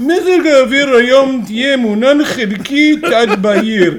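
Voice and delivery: put-on thick Russian accent. Telling a story about a radio weatherman, quoting him in a thick russian accent. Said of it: "with this thick Russian accent".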